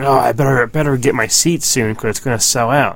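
ordinary talk

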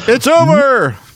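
mock shrill, very high sports announcer yell. Describing how you knew a game was over on tv, imitating an announcer's yell. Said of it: "the announcer would yell".

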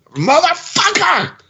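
mock shrill all-out scream, very high. Retelling a moment from a show, imitating Mark Hamill screaming. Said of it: "he just starts screaming".

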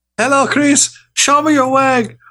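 very high put-on lady voice. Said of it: "That sounds more like, like a tooth lady".

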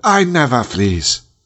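heroic king character voice. Talking about T'Challa with someone who has seen the film, doing a T'Challa impersonation. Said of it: "That's my T'Challa impersonation".

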